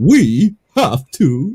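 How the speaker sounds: puppet-like politician delivery. Mocking how Pence talks: Pence impression, actor puppet talk. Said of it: "he talks like this".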